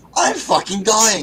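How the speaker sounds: play-acted panicked cry. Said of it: "calling me in full panic".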